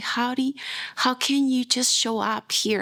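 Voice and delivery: put-on yelling voice. Retelling how the friend yelled at them: imitating someone yelling. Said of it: "He started yelling at me there".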